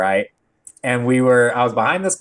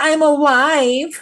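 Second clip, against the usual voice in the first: very high-pitched, whining voice. Retelling what the driver he hit said: imitating a whiny voice. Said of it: "whiny little bitch".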